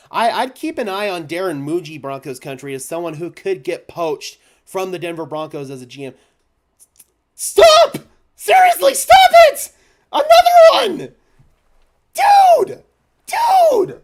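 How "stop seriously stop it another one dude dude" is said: very high, very loud voice cracking. Speaker reacts as someone hands over yet another one, voice cracking with emotion. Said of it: "You're making my voice crack here".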